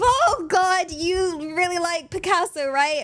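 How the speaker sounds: real panic, high, panicked blurt. Acting out a realistic haircut roleplay where the client is bleeding: panicked. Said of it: "the real panic of".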